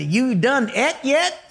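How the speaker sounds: put-on rural Montana accent. Speaker retelling what a ranch cook in Montana asked: redneck accent. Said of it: "they talk with an accent like this".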